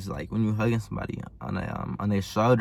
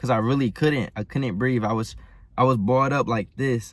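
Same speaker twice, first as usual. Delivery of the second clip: ordinary talk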